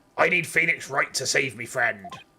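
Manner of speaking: pirate voice. Voicing a pirate character while playing through the game: stereotypical pirate accent. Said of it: "give her like a really stereotypical pirate accent".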